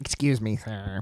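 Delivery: very quiet, hushed, low dropped murmur. Retelling what Justice said at the barbecue shop, imitating Justice's voice. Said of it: "Is that me?".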